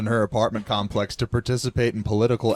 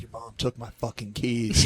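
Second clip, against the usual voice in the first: put-on angry grandfather voice, quieter; 4 dB quieter than usual. Speaker quotes their grandfather during a visit to his home, imitating his anger. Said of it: "he's just like so pissed off".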